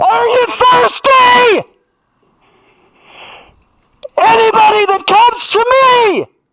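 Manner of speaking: booming, thundering shout, pitched very high. Speaker retells a man standing before a silent crowd, retelling a thundering shout. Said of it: "And he shouts it".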